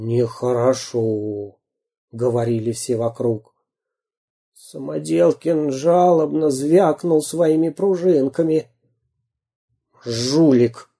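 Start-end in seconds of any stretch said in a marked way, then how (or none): 10.0-10.7 hissed, muttered through clenched teeth. Venya Kashkin jeers at Samodelkin in a crowd, through gritted teeth. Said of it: "процедил Веня Кашкин".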